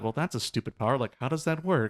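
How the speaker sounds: put-on sarcastic muttering. Describing the English version of the wizard lady, imitating Yidra being sarcastic to herself. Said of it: "sarcastic, talking to herself".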